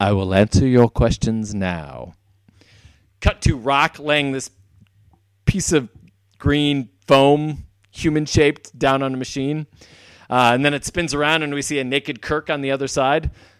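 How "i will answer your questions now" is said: very low spy-film villain voice. Retelling what someone said, in a Bond villain voice. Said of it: "in the perfect Bond villain voice".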